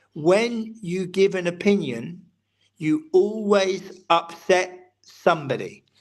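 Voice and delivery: very slow, weighted, deliberate delivery. Sharing a quoted opinion with listeners tonight: very slow delivery. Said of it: "I'll say it very slowly".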